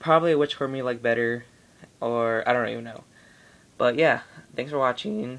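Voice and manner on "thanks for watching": voice breaking and cracking. Signing off a video, voice cracking. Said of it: "Voice crack".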